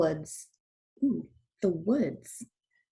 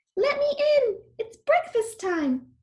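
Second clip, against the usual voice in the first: very high, squeaky put-on voice. Narrator reading the wolf tricking Granny at her door, squeaky voice. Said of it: "squeaked the wolf".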